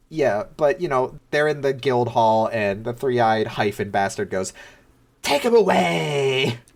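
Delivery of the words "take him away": high creaky sing-song serpent voice, away drawn out. Recapping a story, voicing the three-eyed bastard's order in a lilting serpent voice. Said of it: "in his lilting serpent voice".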